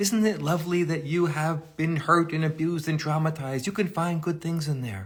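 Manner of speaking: fake cheerful tone. A speaker mimics an attitude they reject to accentuate it, mock-cheerful. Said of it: "I'm mimicking that to accentuate a kind of attitude".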